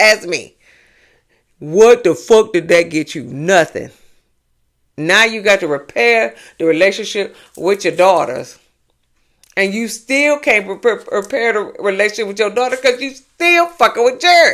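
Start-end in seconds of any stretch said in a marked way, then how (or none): 1.6-14.5 mad, heated, angry rant with swearing. Addressing someone about their daughter, angry rant. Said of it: "I got real mad".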